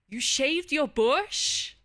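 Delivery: encouraging tone. Streamer acting out different reactions for chat, this one supportive. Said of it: "so we got supportive".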